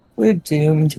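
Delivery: soft, muttered aside under the breath. Voicing a character as she walks out: muttered under her breath. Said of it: "she says under her breath".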